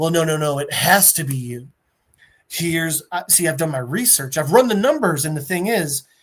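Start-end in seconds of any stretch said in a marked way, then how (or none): none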